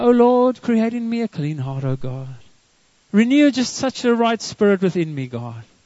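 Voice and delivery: sweet, pleasant, very nice devotional reading tone. Reading scripture the way religious readers do, in a very nice tone of voice. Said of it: "we read it like in a very nice tone of voice".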